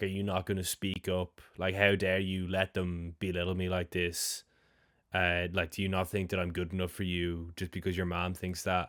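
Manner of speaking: ordinary talk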